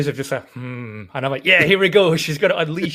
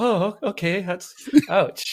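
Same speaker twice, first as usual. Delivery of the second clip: put-on stung, hurt, wounded delivery; 4 semitones higher than usual. Recalling Joe's reaction when Taxi Driver was trashed, imitating Joe sounding hurt. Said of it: "like how hurt he was as he was like".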